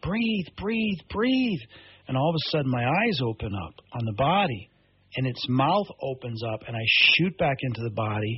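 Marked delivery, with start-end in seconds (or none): 0.0-1.6 put-on very high yelling. Retelling shouting at their own body after it stopped breathing: retelling a yell. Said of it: "So I'm yelling at my body".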